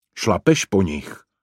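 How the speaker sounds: ordinary delivery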